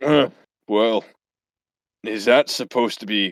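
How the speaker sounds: put-on monster voice. Voicing the Minotaur as it looks at a player: Minotaur voice. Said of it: "the Minotaur looks at you and just says".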